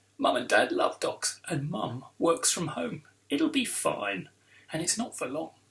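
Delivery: plain reading voice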